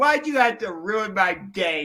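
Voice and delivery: ordinary talk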